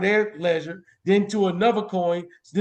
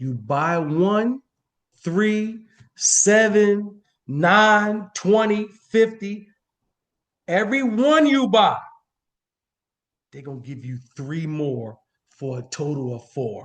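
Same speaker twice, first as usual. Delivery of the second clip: slow, deliberate delivery. Speaker repeats a deal for the audience, saying it slowly. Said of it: "I'm going to say that slow".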